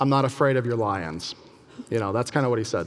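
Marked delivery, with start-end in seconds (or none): 0.0-1.3 mock cheeky, unimpressed, snarky, dismissive tone. Retelling an arrested man's reply to a threat of wild animals: imitating a snarky retort. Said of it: "responds in a somewhat snarky way".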